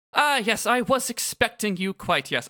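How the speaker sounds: bad, butchered, rough British accent. Acting out a suited man with a clipboard at the door, butchered british accent. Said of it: "he says with a British accent, I'm going to butcher".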